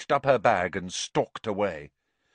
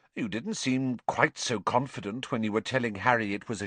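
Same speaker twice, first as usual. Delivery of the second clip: usual speaking voice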